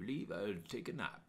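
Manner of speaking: soft, quiet, bad German accent. Retelling Mudkey's answer to a broadcaster, in a bad German accent. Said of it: "I don't know how to sound German. My accents are terrible".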